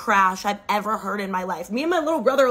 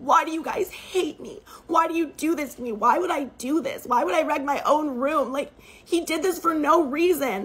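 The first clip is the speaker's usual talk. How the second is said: mock crying, high sobbing through every word; 6 semitones higher than usual. Retelling a stepsister accused of wrecking her room: imitating loud sobbing. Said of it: "she starts sobbing louder".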